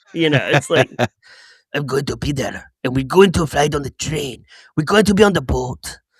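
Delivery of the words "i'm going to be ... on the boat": exaggerated, over-the-top cartoon Spanish-style accent. Mocking an actor's accent throughout a movie, in a Speedy Gonzalez-style accent. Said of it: "He's doing like a uh, Speedy Gonzalez".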